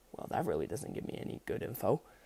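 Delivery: hushed whisper muttered under the breath. Reading a story aloud, Mike reacting to a vague answer: muttering under his breath. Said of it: "Mike under his breath".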